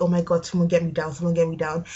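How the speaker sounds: ordinary delivery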